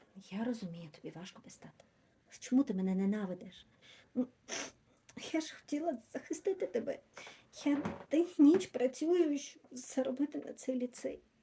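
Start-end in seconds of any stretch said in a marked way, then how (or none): 5.3-11.2 high-pitched, tearful, weeping through the words. A mother answers her child's angry outburst, crying. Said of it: "не плач".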